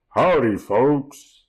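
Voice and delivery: booming, loud, projected voice. Describing a visit to the fair, the speaker imitates the statue's greeting: booming Big Tex voice. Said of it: "He had a booming voice".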